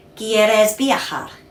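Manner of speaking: quieres viajar said with plain statement intonation. Teaching Spanish, showing the phrase as a statement, statement intonation. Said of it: "Like this statement".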